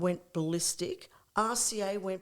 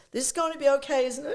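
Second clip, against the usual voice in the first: put-on English accent, higher, louder; 6 semitones higher, 4 dB louder than usual. Retelling a shy man's question in the back of the car, in an English accent. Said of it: "he's very English accent".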